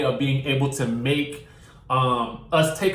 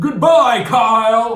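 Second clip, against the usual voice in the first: high, very loud scream, one word stretched long; 7 semitones higher, 8 dB louder than usual. Retelling how cast members mocked Ken Todd: imitating Ken Todd screaming. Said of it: "mocked Ken Todd screaming".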